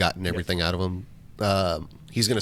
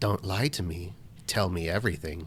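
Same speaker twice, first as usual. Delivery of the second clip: menacing, threatening tone with a note of malice; 5 dB quieter than usual. Playing a character interrogating someone: menacing with a note of malice. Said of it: "with a note of malice".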